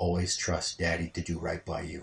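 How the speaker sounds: whispered voice. Retelling a promise whispered to a baby daughter: retelling a whisper. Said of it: "I just whispered into her ear".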